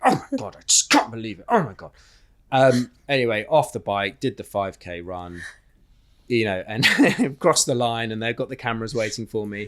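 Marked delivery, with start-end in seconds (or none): 0.0-1.9 high, swooping cursing to himself. Retelling riding the triathlon bike leg after the pedal mishap: retelling cursing to himself. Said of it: "literally just cursing through the bike going".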